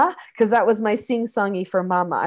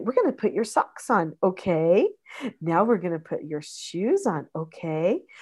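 rising lift at the end of each okay; 4 dB quieter than usual. Demonstrating how to lift the pitch up at the end of each phrase. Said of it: "see how I lift it up at the end".

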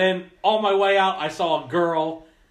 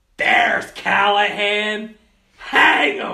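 put-on, very slow, loud, drawn-out heckling scream; 4 semitones higher, 5 dB louder than usual. Recounting screaming at a man in a callahan jersey, retelling a scream. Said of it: "I screamed".

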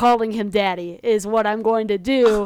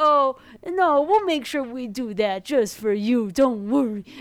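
condescending, mocking baby-talk voice; 4 dB quieter than usual. Retelling what they said to an old man, the speaker uses a put-on baby voice. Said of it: "like a baby uh-huh, voice".

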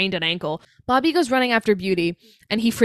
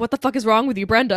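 normal talking voice

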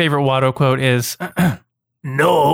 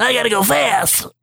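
high, raspy, gravelly put-on voice; 8 semitones higher than usual. Guessing how a character would sound, high, gravelly character voice. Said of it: "I would think it would be a higher pitch, but still gravelly".

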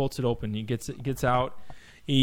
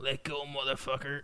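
very quiet, weak, barely audible squealing voice; 10 dB quieter than usual. Recounting a movie fight, the speaker quotes the losing fighter; weak, girly Sho'nuff voice. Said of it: "in like a girly kind of voice".

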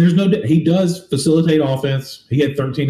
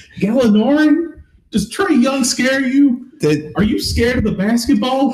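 concerned coach voice, higher pitch; 10 semitones higher than usual. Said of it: "his voice is so, like, concerned".

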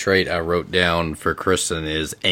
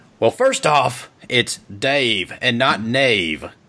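put-on slowed-down accent, higher pitch; 6 semitones higher than usual. Voicing Dave answering a challenge to fight, put-on accent for Dave. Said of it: "even though it's a voice, it's an accent I hear daily".

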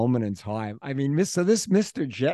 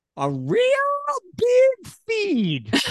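put-on Texan accent, very high and swooping; 3 dB louder than usual. A queens boy, asked for his best texan, gives it a try: put-on texan accent. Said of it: "your best Texan".

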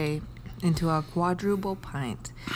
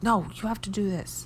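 acted-out mock yelling, higher; 3 semitones higher than usual. Parent describing yelling at a kid who comes to the stairs, retelling a yell. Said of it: "you're just you're yelling".

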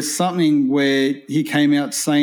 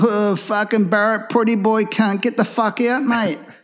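high, slow, put-on jeering lads' voice; 7 semitones higher than usual. Imagining the Wentworthville boys walking in: acting as Wentworthville boys. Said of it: "They'll be go".

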